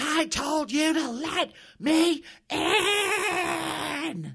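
drawn-out, shrill, very slow, very loud, high scream. A woman who smashed through the door screams back at the man inside, at top of lungs. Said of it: "Shasta screamed back at the top of her lungs".

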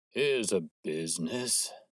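muffled, husky voice. Reading a novel aloud, the narrator gives a newcomer's cry in a muffled, husky voice. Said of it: "he cried in a muffled, husky voice".

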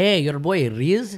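put-on Indian accent. Co-host redoes his show introduction a new way, in an Indian accent. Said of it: "Should you do it in an Indian accent?".

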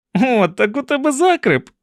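very high, loud, gleeful laughing voice. Narrator voicing one character teasing another, laughing gleefully. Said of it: "Кенні радісно засміявся".

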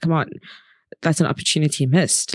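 ordinary delivery

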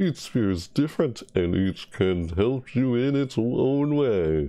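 put-on impression of an announcer voice. Reading spirit descriptions aloud as the announcer, in an announcer voice. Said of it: "That's my impression of the announcer".

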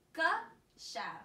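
stress punched on first syllable of Geschaft. Showing a child how to say a practice word: stress on first syllable of Geschaft. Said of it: "you're putting force into the first part".

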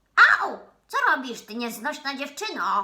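furious, enraged full-volume shout, very loud. The dwarf, losing beard hairs as a girl frees him, shouts at her in rage. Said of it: "Krzyczał rozwścieczony krasnal".

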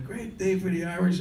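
very high, happy, put-on drunken yelling scream. Retelling his happy, drunk dad in his twenties; imitating drunk screaming. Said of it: "he's screaming".

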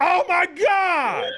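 very high, loud, all-out shouting. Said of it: "at the top of his lungs".

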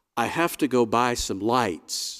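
calm and even. First-person narrator speaks to another person before hurrying out, calmly. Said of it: "I said calmly to Martha".

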